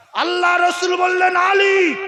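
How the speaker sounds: loud, commanding, high-pitched shout.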